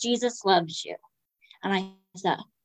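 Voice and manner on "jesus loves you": put-on whispering voice. Retelling words whispered during a hug: imitating someone whispering. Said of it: "he just whispers in my ear".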